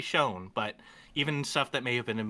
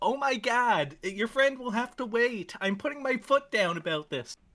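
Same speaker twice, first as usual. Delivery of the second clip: put-on, pitched-up girl's voice; 8 semitones higher than usual. Acting out a scene with the others as the girl: playing the girl. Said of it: "I'm gonna pretend to be the girl".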